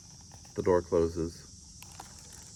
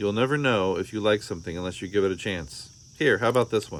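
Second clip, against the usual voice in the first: ordinary delivery, nothing marked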